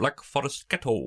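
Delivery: high, playful character voice. Doing a line from Hot Fuzz: Jim Broadbent in Hot Fuzz. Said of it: "Can I do a Jim Broadbent in Hot Fuzz?".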